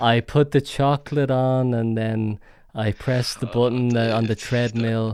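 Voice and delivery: mock bored, unenthusiastic delivery. Imitating the other speaker describing factory work: imitating someone unenthusiastic. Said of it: "you sounded so unenthusiastic".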